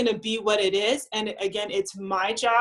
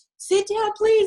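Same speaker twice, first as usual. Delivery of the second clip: put-on anxious pleading, much higher, louder, slower; 12 semitones higher, 6 dB louder than usual. A parent filming their running kids pleads with them, imitating an anxious parent. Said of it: "they're so anxious".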